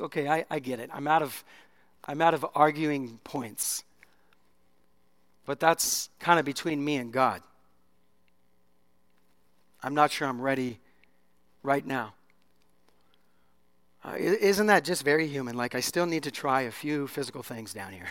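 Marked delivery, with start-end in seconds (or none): 0.0-12.1 very polite, courteous tone. Retelling the woman's answer to Jesus: acting out a polite reply. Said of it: "she very politely goes".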